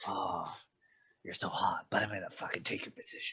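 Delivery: barely voiced, hushed, breathy deadly whisper. Acting out a character threatening to take a rival's position: imitating a death whisper. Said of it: "death whispered".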